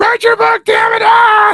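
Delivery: shrill, very high, stretched-out yelling-coach scream. Joking that the guest could be a yelling coach: Sam Kinison-style screaming. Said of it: "where you just start screaming at people".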